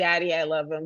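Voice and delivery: ordinary talk, nothing marked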